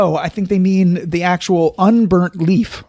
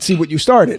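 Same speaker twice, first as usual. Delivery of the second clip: plain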